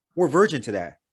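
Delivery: normal talking voice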